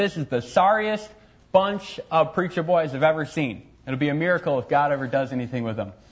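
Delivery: ordinary talk, nothing marked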